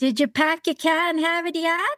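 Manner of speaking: Boston accent, dropped r. Wrapping up an interview with one last joke question, Boston accent. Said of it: "that is Boston for".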